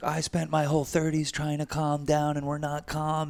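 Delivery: put-on very high, all-out screaming outburst. Retelling screaming at Mary the other day: imitating own screaming. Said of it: "I'm screaming at Mary the other day".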